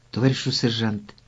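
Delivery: ordinary delivery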